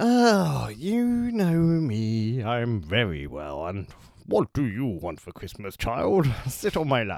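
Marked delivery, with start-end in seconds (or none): 2.4-7.2 acted voice that turns a bit creepy and leering. On the show, [name] answers his co-host in a Santa Claus voice. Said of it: "Do I sound like Santa?".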